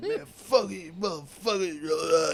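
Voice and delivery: very slow, rough-edged, scratchy angry grumble. Imitating an acquaintance angry off crack: imitating an angry low scratchy voice. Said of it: "a low scratch".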